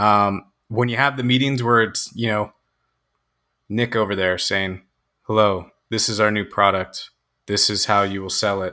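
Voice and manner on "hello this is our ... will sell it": put-on flat monotone voice. Describing a boring product meeting, imitating Nick's monotone. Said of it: "Just very monotone".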